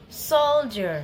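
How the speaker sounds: soldier stressed on first syllable. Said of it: "say it a little louder and longer than the other one".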